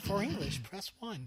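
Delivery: mock recorded phone prompt voice. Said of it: "I wish I could do that voice convincingly".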